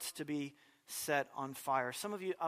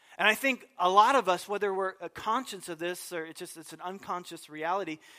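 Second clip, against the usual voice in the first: ordinary talk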